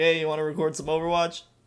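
ordinary talk, nothing marked

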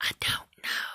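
slow, soft whisper. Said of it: "Why are you whispering?".

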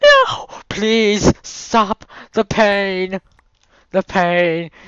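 very high, very loud, shrill wailing scream. Speaker imagines the voices of trees as they are chopped: wailing tree voices. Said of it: "the wailing voices of".

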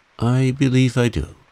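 slightly hesitant, halting. A man answers a question about a woman's situation in life, rather hesitant. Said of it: "(rather hesitatingly)".

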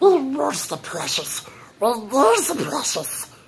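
very high, swooping, singsong creature voice. Showing an impression for the channel: Gollum voice. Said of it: "I'm gonna do Golem right here".

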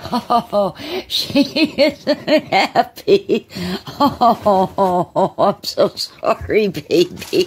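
talking through laughter. Apologizing to a hiding cat that isn't happy, laughing while talking. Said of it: "I know I shouldn't be laughing".

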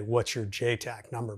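ordinary talk

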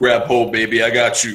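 sexy, sultry barbarian hero voice. Recounting a game scene, delivering a line in a sexy barbarian voice. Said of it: "in my sexy barbarian voice".

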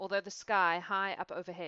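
plain reading voice

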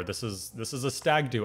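ordinary talk, nothing marked

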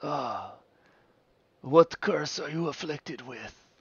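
put-on shrill, very high, very loud old werewolf man voice. Voicing an old werewolf man who questions a traveler: old werewolf man voice. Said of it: "He goes".

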